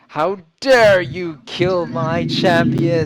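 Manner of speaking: very loud, drawn-out, furious demon bellow. As game narrator voicing the demon lord Gershalu: yelling in absolute anger. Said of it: "more like yells in absolute anger".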